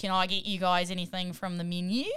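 practice Australian accent. Speaker plays a server taking a table's order to practice, practice Australian accent. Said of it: "Practice my Australian accent".

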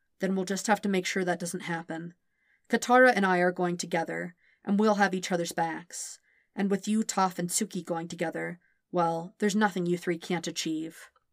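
ordinary delivery

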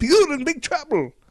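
put-on botched Scottish accent, pitched way up, loud yelling. Retelling a story, Jock yells from a passing truck, bad Scottish accent as Jock. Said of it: "I can't do Scottish".

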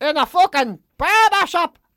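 put-on shrill, drawn-out cranky outburst, very high and loud. Retelling what was said to the barber: imitating own cranky outburst. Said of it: "Exactly like that".

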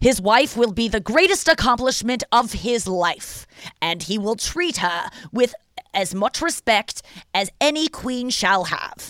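earnest, totally sincere delivery. Describing people on a show they watch, imitating Michael's sincere speech. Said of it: "That's how Michael talks".

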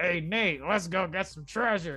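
put-on raspy character voice. Speaker describing Sully from Uncharted, raspy Sully voice. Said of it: "he has the raspy voice, like".

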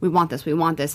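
ordinary delivery

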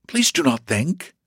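earnest, sincere delivery. A narrator reads his reply to her, earnest. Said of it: "he replied earnestly".

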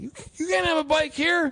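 mock crabby old man yelling. Retelling a crabby old guy yelling about a bike: imitating someone yelling. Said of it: "yelled at me for doing grid".

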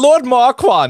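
shrill, very high-pitched, loud voice. Naming an actor as a joke Shrek reference: Lord Farquaad accent. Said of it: "it was in the accent".

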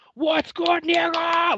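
very high, frantic voice. Retelling a dream where Katt Williams is outside freaking out: Katt Williams freaking out. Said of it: "freaking out on me and shit".

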